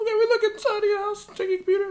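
very high, climbing pitch. Retelling what the officers said to him: voice getting higher and higher. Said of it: "Your voice keeps getting higher and higher".

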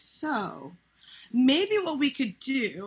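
put-on very slow, swooping, condescending kid-talk. Retelling a talk with her partner, imitating talking to a five-year-old. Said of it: "made it like I was talking to a five-year-old".

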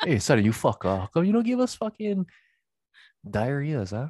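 cheeky, high, swooping Hawaiian Pidgin speech. Imagining menehunes working in Santa's workshop, speaking to Santa in a Hawaiian Pidgin voice. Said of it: "And then they would talk pigeon".

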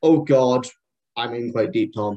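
put-on anxious, out-of-depth, nervous fretting. Retelling planning a training match as a younger self: imitating own nervous past self. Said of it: "nervous Tom".

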